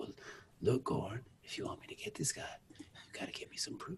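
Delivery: very calm, breathy, hushed near-whisper. Describing an actor's role on a show, impersonating a calm, slow, low Courtney B. Vance. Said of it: "always talks like very calm, very slow, very low".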